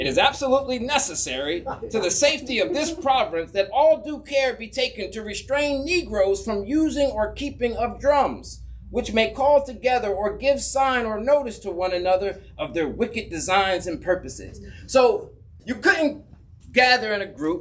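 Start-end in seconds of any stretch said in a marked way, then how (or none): none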